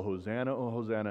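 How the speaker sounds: usual speaking voice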